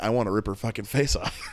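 plain

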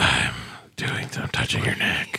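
put-on creepy ASMR voice. Joking about switching to asmr: put-on creepy asmr voice. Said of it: "That sounded a little creepy".

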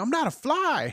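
acted-out yell. Recalling being hit by mom with the fly swatter, retelling a yell. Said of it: "I started yelling".

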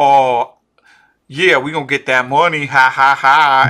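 put-on swaggering tone. Retelling how he tried to act out what he'd say, mocking his fake bravado. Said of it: "he's trying to act out all like".

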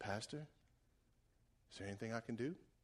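very quiet, soft-spoken, hushed voice. Pastor retelling what Tanner asks him every Sunday morning, Tanner's soft voice. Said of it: "with his soft voice".

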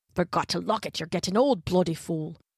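grumbling to oneself. A man who has pushed into an unlocked room, grumbling to himself. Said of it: "he was grumbling to himself".

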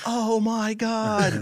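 high, slow, drawn-out shocked gasp.

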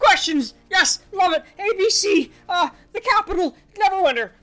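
stammering shouts. Playing a captive splashed awake with water and questioned, shouting and stuttering. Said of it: "he begins to shout and stutter".

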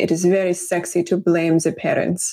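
put-on thick, heavy German accent. Quoting a grad school professor, in a thick german accent. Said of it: "in a very thick German accent".

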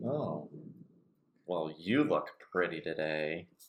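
slow, insincere, flattering tone with sarcastic edge. Showing how a compliment sounds with a slight change: sarcastic tone. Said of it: "it sounds like it's sarcastic".

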